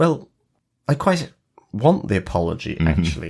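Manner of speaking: very polite, very British delivery. Quoting a favourite line from the show: Michael Sheen's Aziraphale voice. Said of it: "I really love the way Michael Sheen says".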